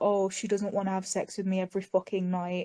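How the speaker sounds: ordinary delivery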